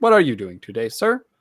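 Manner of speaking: very loud, machine-like robot helper voice. Describing how the bots talk, the speaker demonstrates their robotic Siri-like voice. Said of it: "more robotic".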